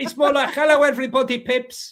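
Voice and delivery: put-on Greek accent, pitched very high. Asked to do a greek accent, the speaker has a go: greek accent. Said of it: "can you do a Greek accent?".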